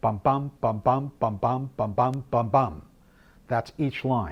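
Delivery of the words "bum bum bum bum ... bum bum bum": iambic beat, stress on every second bum. Explaining a sonnet line of five weak-strong pairs: weak-strong bum pattern, five times. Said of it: "to do it with some emphasis".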